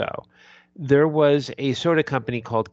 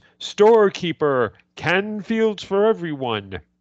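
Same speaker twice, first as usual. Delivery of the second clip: slow, drawn-out, swooping, pitched-up voice; 5 semitones higher than usual. Retelling the end of an old soda ad: Mister Magoo voice. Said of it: "in his best Mister Magoo voice".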